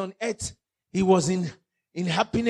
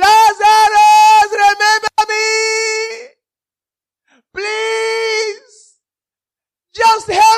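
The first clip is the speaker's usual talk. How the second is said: acted-out shout, much higher, louder; 14 semitones higher, 11 dB louder than usual. Speaker retelling a Bible story, a man calling out to Lazarus, retelling a shout. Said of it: "He shouted".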